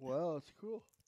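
yawning while talking. Reacting to the view count of the last show: yawning while talking. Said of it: "You're yawning on air".

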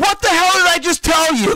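shrill, very high, very loud full-blast scream. Retelling snapping at the wife in the bathroom: retelling a scream. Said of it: "I screamed at her".

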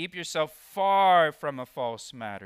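far leaned on hard. Reading a verse aloud, stress on far. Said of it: "Did you see how I emphasized the word "far" when I read that verse?".

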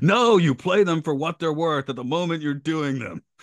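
gruff, rough-voiced answer. Answering an interviewer's question about playing the scenes, in a gruff voice. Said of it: "answers in a gruff voice".

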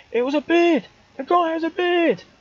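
put-on, very high shout. Retelling a wrestling show where the speaker shouted at the ring: retelling own shout. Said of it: "and I shouted".

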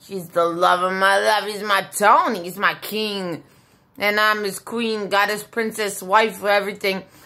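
ordinary talk, nothing marked

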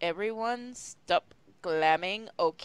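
plain reading voice

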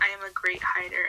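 soft, unvoiced whisper.

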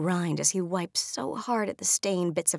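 plain

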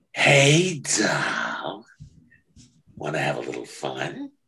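low, slow, swooping lizard voice. Retelling an audition, asked to give a voice for a lizardy looking guy: lizardy guy voice. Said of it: "Give me a voice for that".

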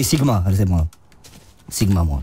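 very low, deep, manly macho voice.

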